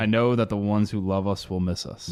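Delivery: plain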